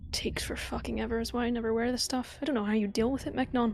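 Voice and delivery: grumpy grumbling, muttered under the breath. Voicing a character taking off armor: grumbling under her breath. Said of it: "Shyla kind of grumbles under her breath".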